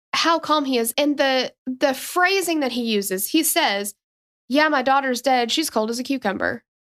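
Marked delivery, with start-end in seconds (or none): 4.4-6.6 put-on blunt, unfazed, fast, matter-of-fact delivery. Describing a 911 call, the speaker quotes the calling father, imitating a matter-of-fact tone. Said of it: "he's just so matter of fact".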